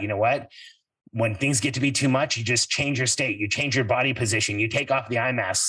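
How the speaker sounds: ordinary delivery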